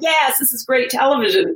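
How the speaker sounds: put-on smug, delighted gloating. Retelling how producers reacted to a sobbing contestant: imitating gleeful producers. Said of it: "the producers are rubbing their hands together going".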